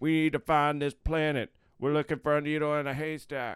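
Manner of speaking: loud, high, dramatic shouting. Retelling a dramatic scene, imitating Keys yelling. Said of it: "Keys is yelling like".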